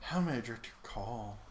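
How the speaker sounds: seductive sultry tone. Showing the other speaker how they would sound answering calls, in a sultry voice. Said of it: "you'd get all sultry with it".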